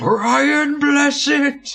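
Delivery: very loud, very high, shrill all-out bellowing shout. Retelling shouting back across the shop at Brian, re-enacting a very loud shout. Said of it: "I shouted back as loud as physically possible".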